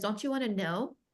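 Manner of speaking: tone going up a little. Imitating how she asks the client a question, tone rising a little. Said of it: "her tone went, went up a little bit".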